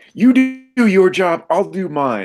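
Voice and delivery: very high, loud, drawn-out shouted yell. Playing a character yelling back at another character: yelling back in character. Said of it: "she yells back".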